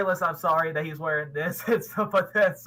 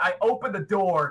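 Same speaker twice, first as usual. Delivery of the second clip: ordinary delivery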